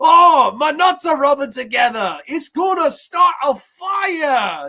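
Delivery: put-on Scottish accent, very high, slow, "fire" drawn out. Quoting a character's line the way he talks: Fat Bastard Scottish accent. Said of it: "the Fat Bastard voice. I don't do it that good".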